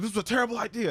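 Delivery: very high, loud, frantic panicking cry. Retelling a story, the speaker acts out a panicking father: imitating a loud panicked father. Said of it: "like was like loud".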